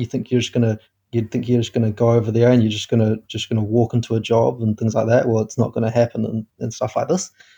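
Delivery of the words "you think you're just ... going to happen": plain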